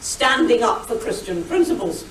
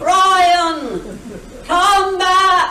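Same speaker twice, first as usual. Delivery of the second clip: announced through a loudspeaker. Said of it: "heard me hail on my loudspeaker".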